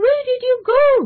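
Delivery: high alarmed cry. John gets no reply from the voice he calls his conscience, asking in alarm. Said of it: "he asked in alarm".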